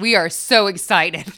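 put-on sarcastic delivery. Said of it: "Why did that sound so salty?".

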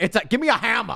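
very high, emphatic, forceful, acted out. Acting out a scene from a movie about accents, acting out saying it forcefully. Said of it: "say it like you mean it".

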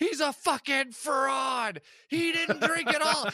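very high, loud, angry accusing scream. Act out yourself screaming from the background while he pretends to be drunk, retelling a scream. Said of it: "I'm screaming from the background".

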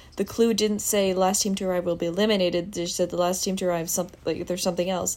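ordinary talk

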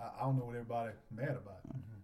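low, quiet, fast, unbothered mumble.

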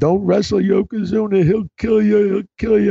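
very high, tearful crying voice. Retelling a pregnant wife's TV interview plea: imitating Deborah crying. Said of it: "she's crying".

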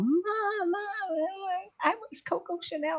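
put-on very high, stretched-out shriek. Retelling a caller's daughter yelling to her mother: imitating a girl screaming. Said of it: "the girl started screaming at her mom".

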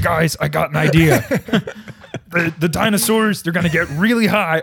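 loud, high-pitched, belted-out comic voice. Imagining a producer pitching a scene to movie makers: Seth Rogen impression. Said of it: "That's my Seth Rogen impression".

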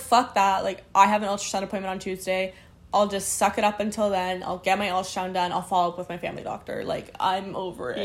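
ordinary talk

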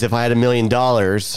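ordinary talk, nothing marked

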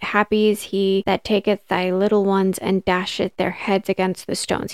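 ordinary talk, nothing marked

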